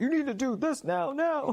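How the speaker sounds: very high, insistent, urgent adult voice. Speaker mocking an adult in conversation: general adult voice. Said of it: "a general adult voice".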